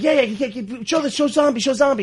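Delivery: mock, very high, eager, excited urgent voice. Retelling how an audience member asked for his cartoon: imitating someone really excited. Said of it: "really excited about it".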